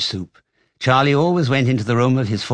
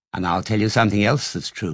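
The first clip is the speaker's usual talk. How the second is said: ordinary delivery, nothing marked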